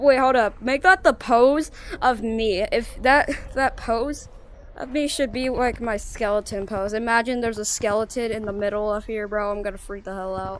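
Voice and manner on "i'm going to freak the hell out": soft, quick sarcastic deadpan. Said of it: "I'm being sarcastic".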